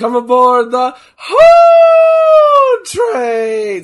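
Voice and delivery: very high, very loud, cracking, drawn-out yell. You have been sick all week and call out to the others, voice cracking from being sick. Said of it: "my voice is cracking because I've been sick".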